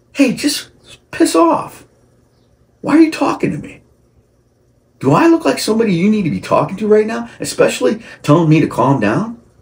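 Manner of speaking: heated, worked-up ranting voice, very high and swooping. Speaker talking about people who say calm down: getting fired up. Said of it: "I'm getting fired up over that".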